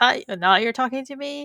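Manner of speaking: sarcastic, snarky, irritated tone. Retelling a TV scene, imitating Maze's reply: snarky Maze impression. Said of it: "snarky at him".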